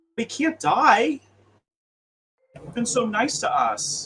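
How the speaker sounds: loud, high, upset, distraught pleading voice.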